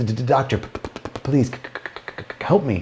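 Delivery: put-on stutter. Telling a joke, voicing a patient with a speech impediment: put-on stutter. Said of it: "with a speech impediment".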